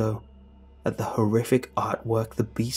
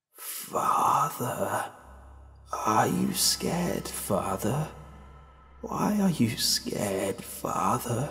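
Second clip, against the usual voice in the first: slow, drawn-out raspy voice; 3 dB quieter than usual. Narrator voicing the thing that keeps calling him father, slow raspy voice. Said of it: "It spoke with a slow, raspy voice".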